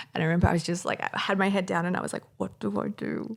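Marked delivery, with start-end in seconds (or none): 2.4-3.4 put-on, very slow, drawn-out sobbing. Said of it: "uncontrollable sobbing".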